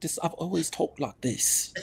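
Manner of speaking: whispered, breathy, affected put-on British accent. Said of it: "an accent".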